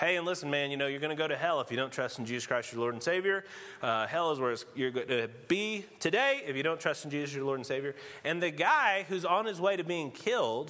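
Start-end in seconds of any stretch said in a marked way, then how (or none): 0.0-7.9 mock matter-of-fact deadpan, low and fast. Retelling what a chaplain told a man on his way to execution, imitating deadpan delivery. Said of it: "saying it in kind of a deadpan way".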